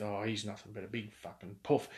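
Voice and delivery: put-on muttering under the breath. Retelling what a mate said near a passing big fella: imitating Macca muttering under his breath. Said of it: "utter the words under his breath".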